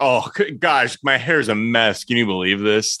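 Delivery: slow, teasing, mocking put-on fretting. Mocking how he fusses over his hair: mocking imitation of him. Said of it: "he's like".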